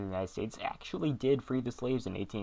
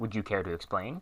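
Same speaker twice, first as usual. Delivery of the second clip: ordinary talk, nothing marked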